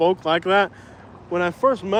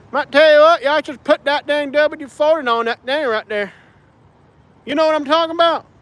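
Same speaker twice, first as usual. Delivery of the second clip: put-on Alabama hillbilly Appalachian accent, pitched up; 8 semitones higher than usual. Explaining how people talked where they lived, the speaker demonstrates a put-on alabama appalachian accent. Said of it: "my Alabama accent".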